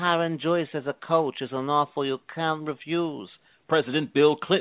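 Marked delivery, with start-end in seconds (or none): 0.0-3.3 quiet, breathy film star voice. Endorsing a coach as a celebrity: Marlon Brando impression. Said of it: "Marlon Brando".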